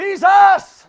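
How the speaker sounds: desperate, high-pitched, loud shouting cry.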